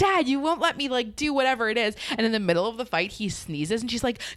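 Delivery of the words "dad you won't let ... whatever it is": mock, high-pitched shrieking and screaming. Retelling a 90210 fight scene, Brenda yells at her dad: imitating Brenda screaming. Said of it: "she's screaming at him like".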